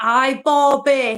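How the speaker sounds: silly fake Scottish accent. Recalling a silly game with her, doing the silly Scottish accent. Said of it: "We used to do this Scottish accent".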